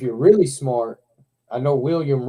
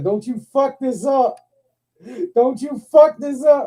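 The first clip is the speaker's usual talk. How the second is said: mock hollering, high hollered yell; 12 semitones higher, 4 dB louder than usual. Recalling hollering from the front row while filming, retelling own yelling. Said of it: "I'm filming and I'm yelling".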